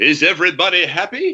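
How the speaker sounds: bad Cuban accent in a bandleader style. Speaker quoting the old SCTV band leader line he says to session runners, bad Cuban accent. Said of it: "a guy from Canada doing a bad Cuban accent".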